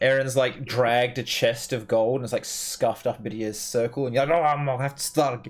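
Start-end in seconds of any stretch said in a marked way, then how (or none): 4.4-5.5 mock grumpy professor voice, higher and louder. Retelling another player's reaction to a scuffed circle: imitating a grumpy professor. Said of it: "grumpy professor on him".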